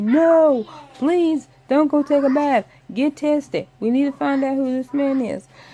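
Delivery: high-pitched, very high screaming. Recounting yelling at a character in a TV show, retelling screaming at the TV. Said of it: "screaming at the TV".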